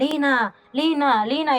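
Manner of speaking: insistent, repeated calling out. Speaker retells hearing her mother's voice while asleep, imitating mom insistently calling name. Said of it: "tan insistente gritando mi nombre".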